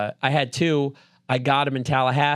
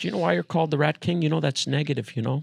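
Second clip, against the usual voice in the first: put-on lecturing voice; 2 semitones higher than usual. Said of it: "he talks like this".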